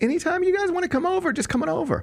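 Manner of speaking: high, breezy and friendly tone.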